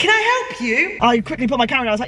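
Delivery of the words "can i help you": high, loud shouted call. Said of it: "The woman shouted over saying".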